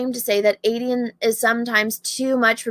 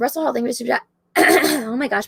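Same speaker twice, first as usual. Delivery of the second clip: cracking, breaking voice, mid-word. Reading out viewer names to thank on a stream: voice cracking. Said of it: "my voice is cracking".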